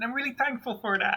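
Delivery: tiny, very high little voice. Voicing a character speaking from inside a crate: little voice from a crate. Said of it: "a little voice coming out of the crate".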